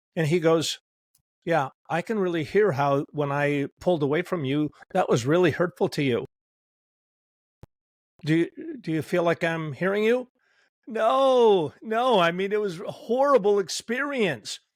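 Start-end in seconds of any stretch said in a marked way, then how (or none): none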